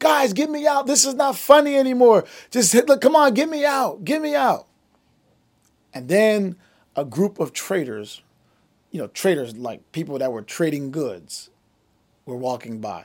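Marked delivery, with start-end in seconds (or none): 0.0-4.7 very high-pitched screaming voice. Retelling how the boy in the ditch begged his brothers: imitating someone screaming. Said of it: "And he's screaming".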